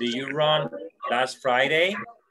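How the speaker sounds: rising question tone, pitch climbing at end on "Friday". Teaching question intonation: rising pitch at end on 'Friday'. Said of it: "You need to go up with the tone. So you need to say, ... Like that".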